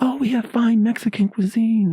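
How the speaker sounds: eager, excited, high-pitched voice. Retelling a worker offering food: imitating an excited woman. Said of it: "she was all excited".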